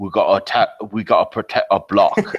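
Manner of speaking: put-on thick, broad East End London Cockney accent, tough voice. Describing a film's gang leader, quoting his line in a thick East End London accent. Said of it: "he's got this really thick East End uh, London accent".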